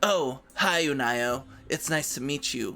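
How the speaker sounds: detached tone. Recapping a scene as a game master, voicing a young boy: aloof voice. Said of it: "He sounds very aloof".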